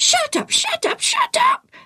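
very high, screeching parrot squawk. A pet parrot flying round the tent repeats what it heard, screeching parrot. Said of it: "The parrot screeched".

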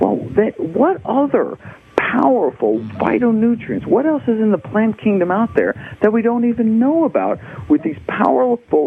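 excited, wondering tone, high.

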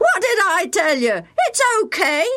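very high, swinging, far-carrying shout. From the far side of a frozen pond, calling to friends, shouting. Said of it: "he shouted".

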